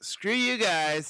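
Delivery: bad put-on cartoon voice. Reacting to a penalty pitch review, in a Cartman voice. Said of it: "In my best Cartman voice".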